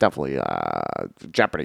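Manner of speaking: very low, creaky voice. Doing an impersonation after the other speaker quotes the film: Rain Man impression. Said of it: "Just go".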